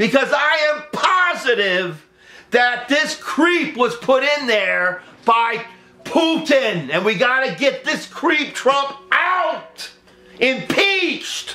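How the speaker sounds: ranting delivery, high pitch. A speaker addressing the audience as folks, screaming. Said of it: "Sorry for screaming".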